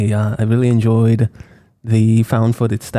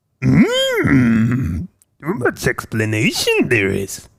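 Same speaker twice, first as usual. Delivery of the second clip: sing-song voice, pitch swooping up and down; 2 semitones higher than usual. Answering in a quick impression after talk of explanations: Yoda voice. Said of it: "you would do Yoda too?".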